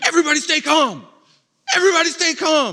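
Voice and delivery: mock, shrill, very high, loud yelling. Recounting a smoke-filled office scene, acting out Michael Scott yelling. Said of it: "he starts yelling".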